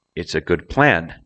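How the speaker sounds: emphasis landing on the noun plan. Reading example phrases to show where stress goes, stress on plan. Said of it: "the stress goes on the noun".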